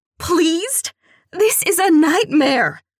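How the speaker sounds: very high, shrill, loud outburst. Reading a daughter's outraged reply to her mother: shrill voice. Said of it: "My voice goes shrill".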